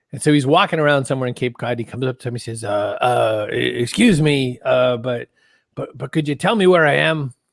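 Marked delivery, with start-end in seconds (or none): 2.6-7.3 bad put-on voice, slow, halting, fumbling, lost-sounding. Telling a joke, pretending anyway to do a bad Peter Falk impression. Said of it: "I can't do an impression of Peter Falk, but I'm gonna pretend anyway".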